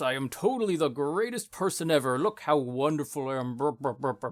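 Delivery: over-the-top, clearly ironic, exaggerated self-praise. Going out of character to exaggerate, in an exaggerated mock-boastful tone. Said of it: "exaggerate for a moment ... in that exact tone, where it's like you can tell it's tongue in cheek".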